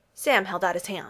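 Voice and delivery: ordinary talk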